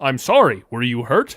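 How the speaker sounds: gentle, caring, tender hulking-brute voice. Describing how the Toxic Avenger talks to a victim he's helping, Toxic Avenger voice. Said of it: "like deformed freak and is like".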